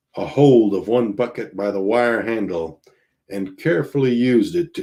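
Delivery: ordinary delivery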